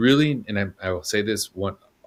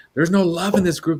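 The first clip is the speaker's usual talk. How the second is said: put-on yell, higher and louder; 9 semitones higher, 5 dB louder than usual. Retelling a friend in a self-improvement group: imitating a friend yelling. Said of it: "she was just yelling".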